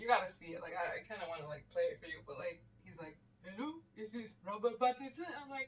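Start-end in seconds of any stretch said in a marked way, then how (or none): 3.4-5.3 put-on stock French accent, high. Describing a role Robert Pattinson played, imitating his French accent. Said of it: "and he had like a French accent".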